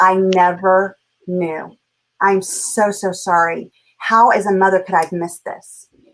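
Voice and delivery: speaking through tears. Retelling Mom's words in the car: imitating Mom crying. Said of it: "And she started crying".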